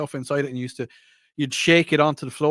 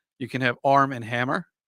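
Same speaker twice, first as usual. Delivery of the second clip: put-on American accent. Doing the line in american for the americans in the room, american accent. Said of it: "I'm going to do it in American now".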